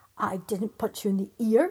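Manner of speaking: loud, growling giant voice. The first giant answers his shouting brother, growled. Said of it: "growled the first giant".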